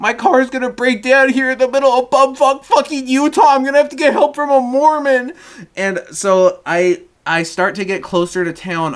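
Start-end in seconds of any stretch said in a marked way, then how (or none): 0.0-5.3 put-on very high voice on the edge of tears. Retelling a van breaking down in the dark, imitating own near-crying. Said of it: "almost actually crying".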